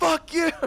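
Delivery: high, loud yell through a laugh.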